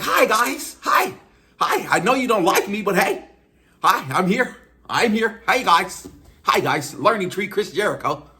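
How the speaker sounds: extra obnoxious, squeaky, very high-pitched voice. Describing how Chris Jericho acts when he goes out there, obnoxious Chris Jericho impression. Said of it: "extra obnoxious. Like".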